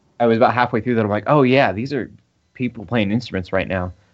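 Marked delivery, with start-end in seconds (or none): none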